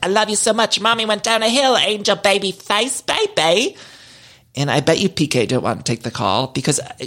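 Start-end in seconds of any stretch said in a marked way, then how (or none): 0.0-3.8 high, gushing voice. Retelling a mother's call to her kid: imitating Dorit. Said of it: "she's just keeping him on the phone like".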